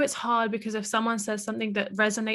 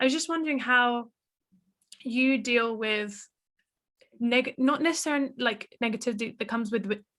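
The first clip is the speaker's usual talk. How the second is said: stuttering, halting, stumbling over words, restarting. Asking the other speaker how they deal with outside negativity, stuttering. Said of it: "I'm stuttering".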